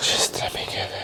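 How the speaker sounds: very quiet, soft, breathy, hushed whisper. Showing what he says to the missus, whispered. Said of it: "but I whisper it".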